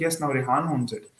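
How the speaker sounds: ordinary talk, nothing marked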